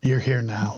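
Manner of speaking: hushed whisper. Speaking in character during a role-playing game scene: whispering. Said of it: "And I whisper".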